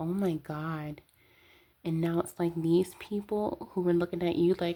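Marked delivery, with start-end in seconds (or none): 0.0-1.0 mock tearful, weepy, sobbing voice. Acting out someone crying in the background: imitating someone crying. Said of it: "with your head down, crying".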